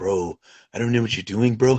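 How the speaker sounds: put-on, low surfer-dude voice. Speaker retelling what his man said while the room got robbed, in a surfer voice. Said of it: "His voice changes like to like a surfer".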